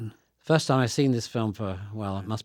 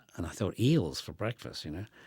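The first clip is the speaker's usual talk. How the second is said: normal talking voice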